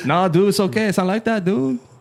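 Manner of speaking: put-on casual Mexican-accented talk. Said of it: "My Mexican impression's pretty good".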